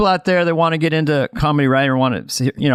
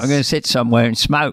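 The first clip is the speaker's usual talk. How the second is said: lower-pitched put-on English accent; 3 semitones lower than usual. Riffing on a quoted line, the speaker does a Michael Caine impression. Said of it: "very easy to go Michael Caine with that".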